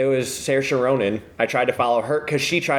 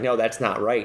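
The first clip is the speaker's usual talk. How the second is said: normal talking voice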